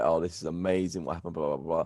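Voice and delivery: ordinary delivery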